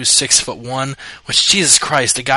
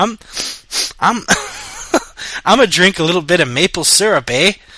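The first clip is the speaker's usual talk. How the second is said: fake Canadian accent, pitched up, with "eh"; 5 semitones higher than usual. Two speakers trading jokes, one doing a put-on Canadian accent. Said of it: "I'm trying to do a Canadian accent".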